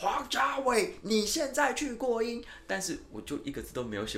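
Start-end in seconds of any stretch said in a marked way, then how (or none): 0.0-2.4 furious, shrill, very high, very slow bellow. Recounting how a supervisor stood up in the press center, retelling the boss's yell. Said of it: "在那个采访中心大吼".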